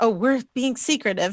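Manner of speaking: plain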